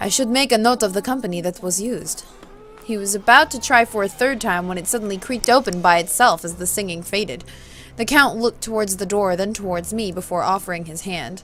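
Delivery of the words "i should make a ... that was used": put-on Russian accent. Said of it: "give him his Russian accent back".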